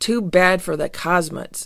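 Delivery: ordinary delivery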